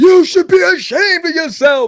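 outraged very high-pitched furious yelling scream. Recounting a dad who screamed at his comic con table: retelling a loud scream. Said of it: "he screams real loud".

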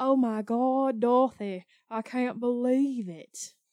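put-on Savannah, Georgia southern belle accent. Show what accent you mean by speaking to Dorothy in a Blanche Devereaux accent. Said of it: "It's a Blanche Devereaux accent".

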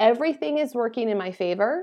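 ordinary talk

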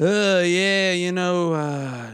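put-on tipsy, gloomy rambling. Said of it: "he's a little buzzed up".

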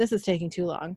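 plain

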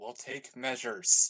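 whispered, in a character voice. Voicing a character who steps up beside Arla: whispering in character. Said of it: "I go up beside Arla and I whisper".

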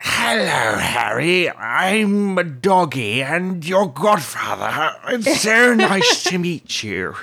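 put-on drunk-sounding slur. Mocking how Sirius is voiced, doing a drunk-sounding Sirius impression. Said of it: "Sirius just kind of sounds drunk all the time".

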